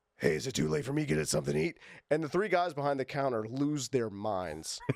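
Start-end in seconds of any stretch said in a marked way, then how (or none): 0.2-1.8 gravelly, creaky voice. Retelling how he walked up to the counter and spoke to three guys, gravelly Booker T voice. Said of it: "he's got that you know gravelly voice".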